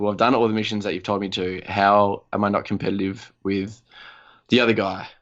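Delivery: normal talking voice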